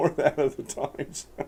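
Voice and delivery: soft, slow, laughing delivery. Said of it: "I can't read this one without laughing".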